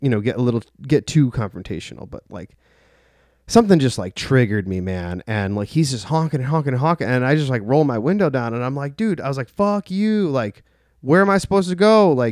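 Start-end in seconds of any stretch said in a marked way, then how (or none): 9.0-12.1 put-on screaming, higher. Retelling a fight with a honking driver: imitating screaming at a driver. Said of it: "just screaming at this dude".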